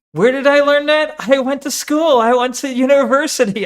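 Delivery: smug smile in the voice. Repeating another speaker's answer about learning at university: imitating smug smile talking. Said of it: "that smug smile talking".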